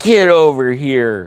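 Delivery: acted nasty, threatening, demanding tone. Speaker recounts a man getting mean with them; retelling a mean command. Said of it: "And then he got mean with me".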